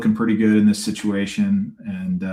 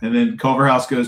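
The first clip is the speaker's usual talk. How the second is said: ordinary talk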